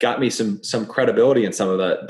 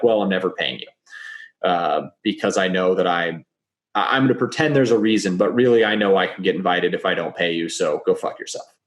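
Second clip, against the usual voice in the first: ordinary delivery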